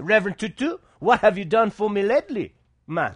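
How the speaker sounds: Jamaican accent gradually creeping in. Speaking before ladies and gentlemen, questioning the reverend, slipping into a Jamaican accent. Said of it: "I was slipping into a Jamaican accent there".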